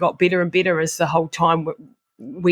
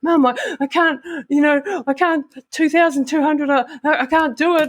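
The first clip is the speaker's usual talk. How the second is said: mock sobbing, much higher, slower; 10 semitones higher than usual. Recalling a meltdown in front of their mum, reenacting sobbing. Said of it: "crying my eyes out".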